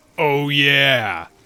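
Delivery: stretched ending, long drawn-out "yeah". Trying a first Kool-Aid Man impression: Kool-Aid Man impression. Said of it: "I'm no good at doing a Kool-Aid Man impression".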